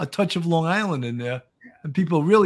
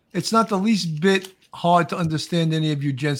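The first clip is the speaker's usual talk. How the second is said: plain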